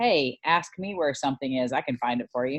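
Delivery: ordinary delivery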